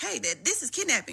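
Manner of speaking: high-pitched put-on boy voice, protesting yell. A woman retells what a boy shouted at her in front of a hotel: retelling a boy yelling. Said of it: "he's yelling kidnapping".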